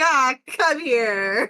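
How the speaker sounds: mocking, sarcastic jab. Voicing a character grabbing another in a bear hug, sarcastic jerk. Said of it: "me being so the sarcastic and jerk person I am".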